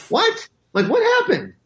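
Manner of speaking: confused high-pitched squeak. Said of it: "And I went".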